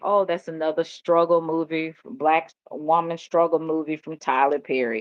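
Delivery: plain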